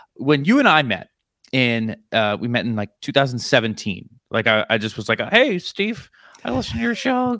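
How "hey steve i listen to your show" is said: very high-pitched voice. Retelling first meeting another speaker, imitating own past voice. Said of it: "That's how I sounded back then".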